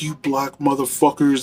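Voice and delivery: shouting. Retelling a veteran yelling at inmates: imitating someone yelling. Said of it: "he starts yelling at the D C inmates".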